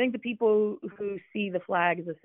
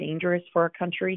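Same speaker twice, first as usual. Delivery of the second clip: normal talking voice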